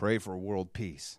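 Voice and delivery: put-on sarcastic voice. Telling a story, speaker repeats the checkout lady's answer, mimicking a sarcastic reply. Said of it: "laughed and sarcastically said".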